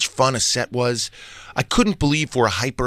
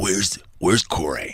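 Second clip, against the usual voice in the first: hushed, low, confiding stage whisper; 5 semitones lower than usual. Recounting what one of the Juggalos half-whispered during a photo: retelling a half-whisper. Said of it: "one of them whispered to me".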